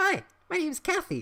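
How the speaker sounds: perky, chipper, very high-pitched cheerful voice. A waitress walks up to two customers and introduces herself in a chipper tone. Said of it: "she said in a chipper tone".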